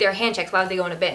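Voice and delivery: mock snippy tone, full of attitude. Retelling an airport security agent's snippy reply: imitating someone giving attitude. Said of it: "just giving me attitude".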